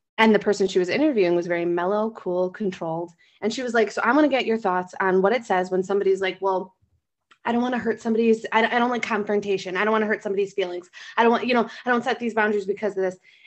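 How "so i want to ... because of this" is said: usual speaking voice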